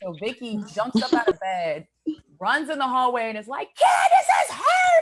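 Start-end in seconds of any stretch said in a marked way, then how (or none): 3.7-5.0 very high, loud, frantic panicked scream. Retelling a woman running into the hallway for help, imitating a scream. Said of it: "she starts screaming".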